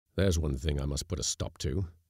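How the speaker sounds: plain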